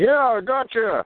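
muffled, very high, loud, talking with mouth full. Asked if he can hear, Deadpool answers the speaker in a muffled Deadpool voice. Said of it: "You you sound kinda muffled there".

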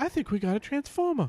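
put-on very high voice with a slight British accent. Asked to repeat it, speaker does their Mark Wahlberg impression again. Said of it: "Why do all your impressions involve your voice getting higher".

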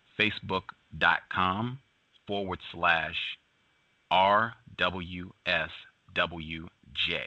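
slow, deliberate, spelled-out delivery. Repeating a web address for listeners, saying it slowly. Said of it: "I'll say it again slowly".

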